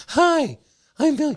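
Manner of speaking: very high, loud, squeaky put-on voice. Acting out Billy introducing himself, imitating Billy Husso in a high voice. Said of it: "I'm going to do the high voice".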